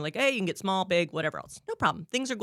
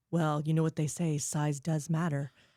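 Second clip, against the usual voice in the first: put-on secretive conspiratorial whisper, lower pitch; 3 semitones lower than usual. Retelling a coworker's remark made across the countertop: imitating a conspiratorial whisper. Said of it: "whispering conspiratorially with me and him".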